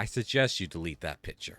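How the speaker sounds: mock, heavy, pointed tone, not angry. Retelling what a man said about a photo: mock heavy suggestion, not mad. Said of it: "says in a very like, uh, like a tone that's like you're not mad, but you're heavily suggesting".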